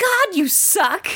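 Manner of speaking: put-on very high shouted outburst. Recapping a scene, imitating a character shouting at her mom. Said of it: "she shouts at her mom".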